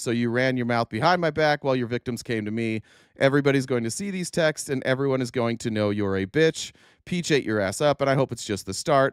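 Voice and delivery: ordinary talk, nothing marked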